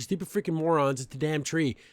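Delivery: ordinary delivery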